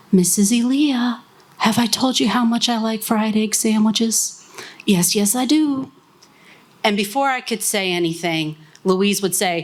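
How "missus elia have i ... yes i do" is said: imitated man's near whisper, pitched higher. Speaker recalls Wayne coming next to her to speak: imitating Wayne's near whisper. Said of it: "almost in a whisper say".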